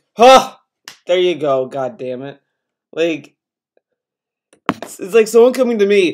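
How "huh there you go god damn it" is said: irritated, annoyed, begrudging tone. Retelling how someone answered a compliment: imitating an annoyed reply. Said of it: "he's like".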